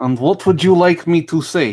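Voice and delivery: loud, high-pitched, fake put-on Russian accent. Asked by another speaker to do a russian accent: put-on russian accent. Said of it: "Can you do a Russian accent?".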